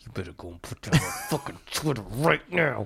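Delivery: put-on seething anger, spoken through clenched teeth. Imitating a dad who talked through his teeth when mad: mock-angry, through clenched teeth. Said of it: "talks through his teeth".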